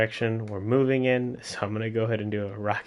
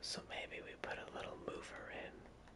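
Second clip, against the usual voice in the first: very soft whisper under the breath. Thinking aloud while adjusting settings: whispering. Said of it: "I don't know why I whispered that".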